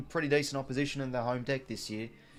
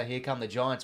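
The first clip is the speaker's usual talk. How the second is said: plain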